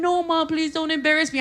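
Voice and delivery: sobbing, tearful, pleading, crying voice. Retelling her daughter's plea: imitating her daughter crying. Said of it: "And she's crying".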